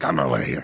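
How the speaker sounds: very low put-on puppet-monster voice. Retelling what a director said on set, in a Cookie Monster voice. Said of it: "he spoke like, um, Cookie Monster one day".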